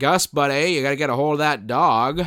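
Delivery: put-on small-town Maine sheriff accent. Quoting the sheriff's early line in the movie: imitating a Maine accent. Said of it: "his main accent appears and disappears".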